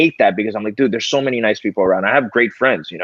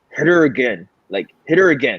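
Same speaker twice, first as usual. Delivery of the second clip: mock furious, fed-up, pissed-off angry voice; 2 semitones higher than usual. Retelling grabbing his son after the son hit his sister: retelling own angry words. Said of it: "and I'm pissed".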